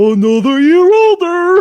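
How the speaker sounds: very high, very loud squealing cartoon voice. Asked to do cartoon voices, a speaker tries the Patrick Star voice. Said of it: "I could probably do a Patrick Star better".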